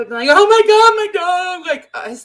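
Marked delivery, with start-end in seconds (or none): 0.3-1.7 very high, loud, stretched hysterical outburst. Acting out people reacting to losing a dog: imitating hysterical panic.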